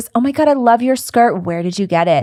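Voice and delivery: mean-girl voice, fake, not meant sincerely. Retelling a Mean Girls scene, imitating Regina George. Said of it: "Regina George stops some random girl ... says".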